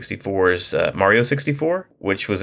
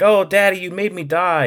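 put-on very high, upset child voice; 11 semitones higher than usual. Retelling a child's complaint after Mario dies in lava: imitating an upset daughter. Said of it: "she gets real upset with me".

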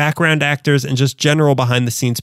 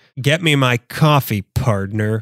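put-on slow, drawn-out old-movie Western cowboy voice; 3 semitones lower than usual. Doing a sound effect from the Western days: John Wayne voice. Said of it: "That's John Wayne".

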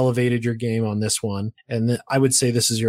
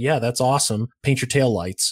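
usual speaking voice

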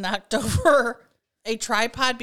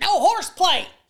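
mock old-lady yell, higher and louder; 7 semitones higher, 4 dB louder than usual. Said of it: "like an old lady yelling".

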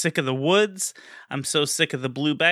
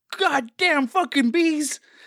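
very high-pitched screaming; 11 semitones higher than usual. Recounting a game's bees while on the phone, retelling a scream. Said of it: "I kept screaming".

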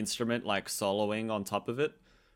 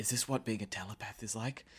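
put-on quiet mutter, quieter than before; 9 dB quieter than usual. Retelling a game scene, the speaker quotes a character muttering quietly to herself. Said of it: "in a quiet voice to, like, herself".

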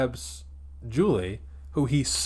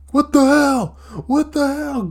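shrieking, very high, very loud scream; 14 semitones higher, 10 dB louder than usual. Retelling a film scene where a kid's arm catches fire, mock-screaming. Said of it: "And he's like screaming".

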